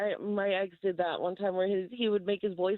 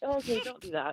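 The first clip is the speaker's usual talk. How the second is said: ordinary delivery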